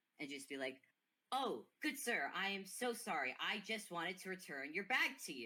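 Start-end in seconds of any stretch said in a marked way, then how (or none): 1.3-5.5 raised, louder voice in character. Playing a character who apologizes to a gentleman: raising his voice in character. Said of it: "Guy's just going to raise his voice".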